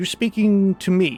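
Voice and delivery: female animal creature voice. Voicing a fox that answers a player: female fox voice. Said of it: "it's a female voice".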